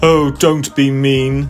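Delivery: put-on with a sniffle. Big Bad, refused entry by the three little pigs, sniffling. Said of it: "sniffled Big Bad".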